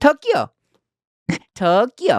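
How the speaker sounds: Tokyo said sing-song, swooping, very high-pitched. Following a cue to raise the pitch and say a place name, with raised pitch. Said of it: "Raise the raise the pitch a little bit".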